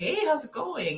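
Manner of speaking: acted-out cheery voice. Recalling how phone calls usually went: imitating own happy greeting. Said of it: "the usual happy".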